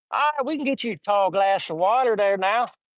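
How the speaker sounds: put-on Southern accent laid on thick. Retelling what people at a party answered when offered water, overdone Southern accent. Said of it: "too much of a Southern accent".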